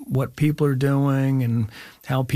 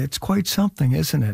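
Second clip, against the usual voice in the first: mild, low-key, understated delivery. Retelling what a friend said on set: imitating someone speaking very quietly. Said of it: "just said very quietly".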